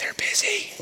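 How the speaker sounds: high-pitched, unvoiced whisper.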